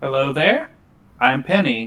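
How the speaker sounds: full motherly, doctor-like voice. Penny greets a child of about ten, full mom doctor voice. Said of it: "Penny goes full mom doctor voice".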